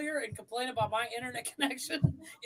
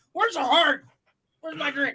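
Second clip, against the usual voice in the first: very loud, mock drunk kid voice; 9 dB louder than usual. Acting out a kid stumbling around the house: mock drunk kid voice. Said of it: "He just stumbles around the house".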